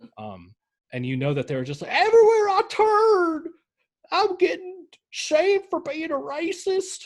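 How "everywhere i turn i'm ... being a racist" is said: very high, loud put-on Southern drawl, drawn out. Acting out other people in a story, mocking Southern voice. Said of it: "with my Southern voice".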